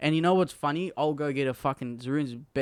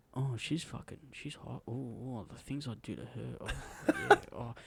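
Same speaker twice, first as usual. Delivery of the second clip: much quieter put-on whisper; 9 dB quieter than usual. Retelling what a man said when a girl walked past, imitating his whisper. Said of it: "I got to whisper it".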